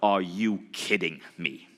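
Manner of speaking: put-on, really intense, stern, slow delivery. You are retelling what Bob Proctor said to you, in a really intense Bob Proctor voice. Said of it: "really like intense voice".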